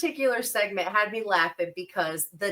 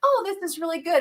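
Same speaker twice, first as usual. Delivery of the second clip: put-on sweet, high, cute small-child voice; 8 semitones higher than usual. Retelling a small kid tasting a drink, in a cute little kid voice. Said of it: "In this like cute little kid voice".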